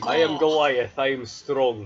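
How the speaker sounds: put-on Russian accent. Introducing a Goliath barbarian character to the table: put-on Russian accent. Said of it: "Russian by sound of voice".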